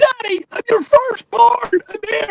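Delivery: put-on very high, loud child's hollering shout. Retelling how a child shouted at the speaker, who didn't see him: imitating a child shouting. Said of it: "he's shouting".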